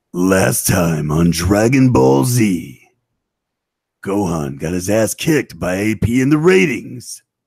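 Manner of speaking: deep, slow, dramatic from-the-chest announcer voice. Doing a last-time-on episode recap: Dragon Ball Z narrator voice. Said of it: "in the voice from the episode".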